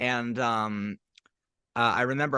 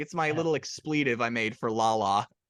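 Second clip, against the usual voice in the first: usual speaking voice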